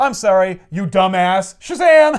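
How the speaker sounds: mocking, taunting tone ending in a loud high yell.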